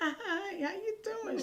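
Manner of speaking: put-on faint voice. Retelling how a scared girlfriend greeted a stranger: imitating Chris's faint voice. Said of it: "in a real faint voice".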